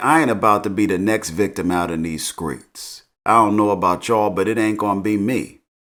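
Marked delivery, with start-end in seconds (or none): none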